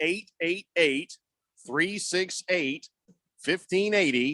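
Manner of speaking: slow, careful, deliberate reading of each digit. Giving the text line number to new texters, said slowly. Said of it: "I'll say the number slowly for you".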